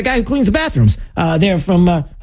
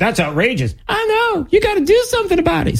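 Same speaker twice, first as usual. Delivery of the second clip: very high, sneering, mocking put-on voice; 13 semitones higher than usual. Acting out the president's reaction to what someone showed him, mocking impersonation. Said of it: "that's my impersonation of your idiocy".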